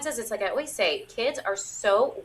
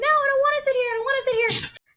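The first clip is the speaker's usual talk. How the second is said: put-on very high, loud, shrieking little-kid scream; 5 dB louder than usual. Acting out a child tied to a park bench: imitating a screaming child. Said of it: "the child's screaming and saying".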